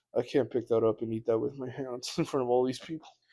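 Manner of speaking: rushed, rattled-off, panicked inner voice. Retelling staring at a huge rib at dinner: retelling own panicked thoughts.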